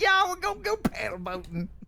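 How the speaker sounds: very high-pitched, exaggerated, over-the-top Southern hillbilly accent. Saying paddle boats like at home: exaggerated hillbilly Southern accent. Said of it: "when you imitate my accent, I wanna do a turbo version of it".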